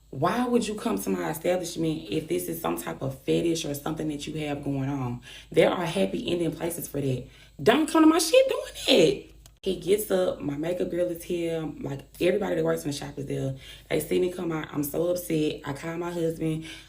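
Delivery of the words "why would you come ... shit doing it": ordinary talk, nothing marked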